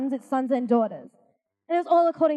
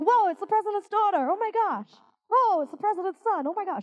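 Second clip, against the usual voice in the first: put-on American accent, pitched up; 7 semitones higher than usual. Imitating people reacting to a president's children, put-on American accent. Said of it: "I'll put on an American accent".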